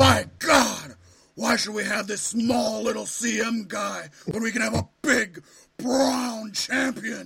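loud, booming boss voice. Trying out another impression on a co-speaker after a terrible one, Vince McMahon impression. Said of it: "How's my Vince McMahon?".

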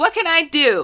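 sassy, high, tossed-off. Describing a TV research character, imitating her: sassy Penelope voice. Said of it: "she's, like, sassy".

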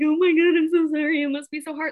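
high-pitched, tearful, crying, sympathetic voice. Retelling how her mom reacted on hearing the news, imitating mom crying in tears. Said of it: "in tears crying".

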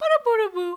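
put-on elevated baby-talk voice, very high and loud. Showing how people talk to a dog as to a small child: elevated baby-talk voice. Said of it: "the elevated voice of, like".

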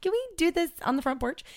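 mock embarrassed pleading tone, very high and squeaky.

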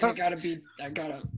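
put-on, puffed-up tough voice. Imitating James walking in and puffing himself up. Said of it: "puffing himself up".

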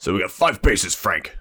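put-on pirate voice, full character. Painting the pirate world of a game for listeners, pirate voice. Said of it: "your pirate voice".

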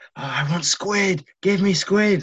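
mock very high, sloppy drunken shriek. Retelling how a drunk tourist screamed at waiters: imitating a drunk woman screaming. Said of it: "she was screaming at the waiters".

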